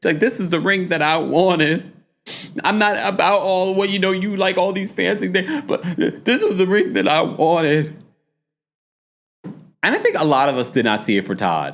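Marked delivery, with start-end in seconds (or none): 0.2-7.9 mock tearful, quavering, high-pitched crying voice. Recapping a scene where Mama Joyce downgrades the ring, imitating Kandi's shaky crying voice. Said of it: "into the shaky crying voice".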